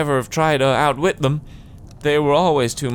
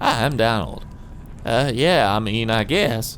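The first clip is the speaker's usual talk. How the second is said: put-on slow, drawn-out American accent; 3 semitones lower than usual. Trying to give Donald, who has an Irish accent, an American accent: Donald's voice. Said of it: "That's Donald's voice".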